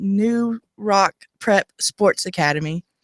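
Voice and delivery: slow, deliberate, careful word-by-word enunciation. Introducing a studio guest's academy by its full name: saying it slowly. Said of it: "I had to say that slow".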